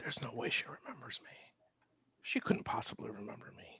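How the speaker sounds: very soft, hushed theatrical stage whisper. As a character seeing her attack surrendered stormtroopers, speak in a stage whisper. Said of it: "will say in a stage whisper".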